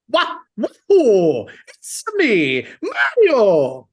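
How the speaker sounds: very drawn out, high and swooping. Showing the voice done in public to embarrass family: Mario impression. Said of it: "That's pretty good".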